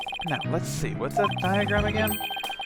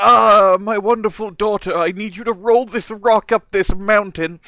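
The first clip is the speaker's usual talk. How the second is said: put-on eighty-year-old elderly man voice; 6 semitones higher, 8 dB louder than usual. Imitating another speaker's father giving her a task: eighty-year-old man voice. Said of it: "I made your dad eighty years old while I was doing that voice".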